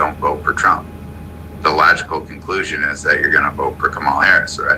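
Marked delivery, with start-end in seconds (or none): none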